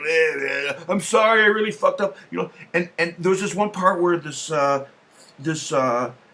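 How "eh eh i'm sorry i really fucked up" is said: mock drunken, boozy character voice. Retelling a cartoon scene where the character is drinking: imitating a drunk character. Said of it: "He'd be drinking alcohol".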